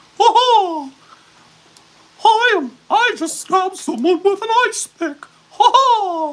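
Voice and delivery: very high, loud, cartoonish voice. Joking about how a killer sounds: Mickey Mouse voice. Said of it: "sounds like Mickey Mouse on steroids".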